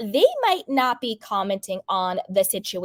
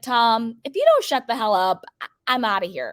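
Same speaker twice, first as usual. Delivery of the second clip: ordinary talk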